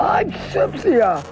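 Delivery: rasping, raspy monster voice. Reading a story aloud, voicing the second monster introducing itself: rasping Cynthia monster voice. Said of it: "The second monster rasped".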